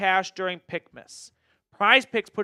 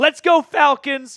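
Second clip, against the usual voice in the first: voice breaks mid-phrase, cracking, pitched-up cheer; 7 semitones higher, 6 dB louder than usual. Reading a viewer's super chat aloud, with a voice crack. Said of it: "that's a weird voice crack".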